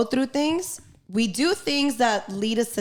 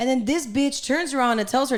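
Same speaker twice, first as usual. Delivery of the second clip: plain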